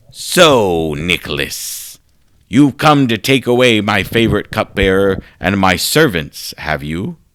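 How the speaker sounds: raspy, wicked, evil-sounding voice. Reading a story aloud, voicing the hooded figure on the throne: raspy wicked voice. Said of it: "a raspy and wicked voice".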